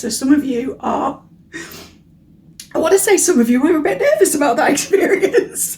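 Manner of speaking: voice breaking up, cracking and nervous. Reader starts a singles love reading for listeners, cracky voice. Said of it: "my voice is cracky as I'm saying this".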